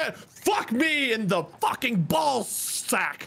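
very slow, high, drawn-out angry cursing. Reacting to a shot in a golf game: angry outburst. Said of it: "Sorry, I got a little angry there".

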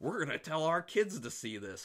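heavy mocking sarcasm. Retelling what a couple said to them after watching, retelling a sarcastic remark. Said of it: "They were being very sarcastic".

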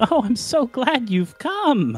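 voice full of cackles. As game master, voicing an unseen figure as doors slam open, in a cackling voice. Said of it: "You hear a cackling voice say".

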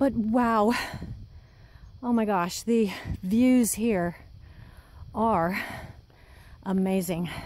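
breathless, out of breath. Hiking uphill on a trail, taking in the views, out of breath. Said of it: "I'm totally out of breath".

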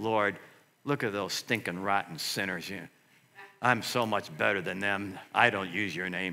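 muttering under breath. Retelling own muttered prayer on the course: retelling muttering under breath. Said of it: "what am I doing under my breath?".

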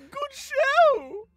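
very high, loud, shrill cartoon voice, "show" stretched. Asked for an example, doing the Newt character voice: Pops from Regular Show voice. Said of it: "literally just Pops from regular show".

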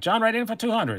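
perky, very high auctioneer-style bidding call. Calling bids in an auction, the speaker puts on a perky auctioneer voice. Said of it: "I'm doing the voice".

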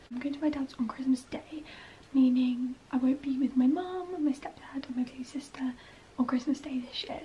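speaking in a hushed whisper. Everyone else is asleep, so the speaker keeps to a whisper. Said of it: "I'm so sorry I'm having to whisper on this bit".

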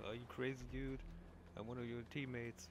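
normal talking voice

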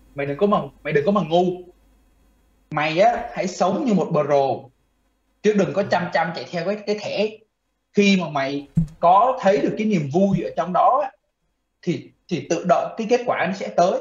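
usual speaking voice

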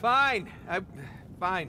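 loud, high shouting.

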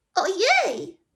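very high little exclaiming cry. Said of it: "Zawołał".

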